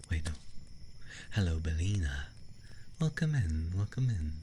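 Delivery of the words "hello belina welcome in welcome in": put-on vampire host voice, welcoming. Welcoming Belina in during a game, the speaker does a vampire voice. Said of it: "I'm having to do my vampire voice".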